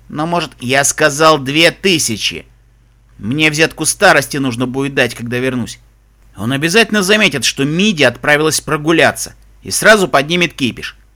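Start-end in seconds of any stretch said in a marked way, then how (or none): none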